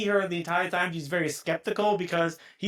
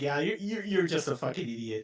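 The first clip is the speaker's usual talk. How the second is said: put-on sarcastic tone, quieter; 3 semitones lower, 5 dB quieter than usual. Retelling what a skeptical woman in a film clearly meant: imitating a sarcastic voice. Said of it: "you can clearly hear a voice that was just sarcasm".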